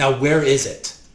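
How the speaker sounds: stern, severe tone. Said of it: "she gets really stern for a second".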